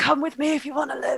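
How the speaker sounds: soft half-whisper, very close to the ear. Half-whispering a line into another character's ear: half-whispering in someone's ear. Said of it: "I whisper into Kulanov's ear".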